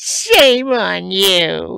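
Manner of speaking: mock affronted sad little voice, very high, very loud. Retelling a scene where the Grand Nagus stops and looks: imitating a sad little voice. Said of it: "with his sad little voice".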